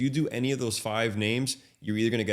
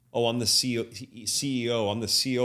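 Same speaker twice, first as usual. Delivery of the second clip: plain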